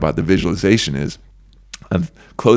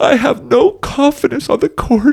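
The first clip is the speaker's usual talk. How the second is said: very high goofy voice, drawn out; 4 dB louder than usual. Demonstrating how to mock the voice in your head: silly Mickey Mouse voice. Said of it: "use your funniest Mickey Mouse, silly, stupid voice".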